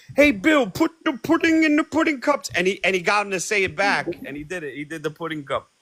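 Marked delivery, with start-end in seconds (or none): 0.2-2.5 very high put-on comedian voice. Act out a buddy calling to the celebrity at Philadelphia airport, in a Bill Cosby impression. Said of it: "my buddy does a good impression of him".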